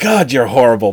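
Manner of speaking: eager, thrilled outburst with real excitement. Retelling a movie scene where Swan sees the face: imitating Swan, excited. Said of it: "But he's excited about it".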